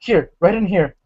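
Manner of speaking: frightened voice. Narrating a scene, a voice heard after a door reopens speaks in a scared voice. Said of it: "you hear this uh, scared voice say".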